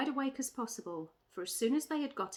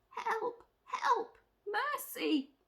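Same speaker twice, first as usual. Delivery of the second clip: weak, faint, failing cry, very high pitch; 12 semitones higher than usual. Narrator reads a witch crying for help as the others leave her: faint voice. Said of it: "cried the witch in a faint voice".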